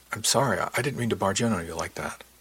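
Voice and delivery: ordinary talk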